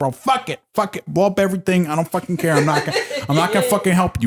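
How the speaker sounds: put-on complaining, Italian-ish accent. Retelling a game story, the speaker quotes a player complaining, imitating Asmith's Italian-ish accent. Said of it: "he almost has like an Italian accent".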